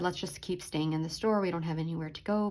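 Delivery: plain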